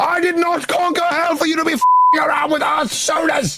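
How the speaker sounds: shrill, very high-pitched yelling. Playing a character berating another speaker, shouting. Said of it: "You don't have to shout at me".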